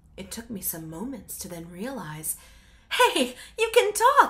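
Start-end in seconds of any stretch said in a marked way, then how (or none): 2.9-4.3 very high, startled, laughing burst of surprise. The narrator realizing the creature can talk, laughing in surprise. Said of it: "I laughed in surprise".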